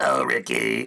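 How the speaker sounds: coaxing, pleading, begging tone. Imitating Lucy calling to her husband: Lucy voice. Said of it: "she was like".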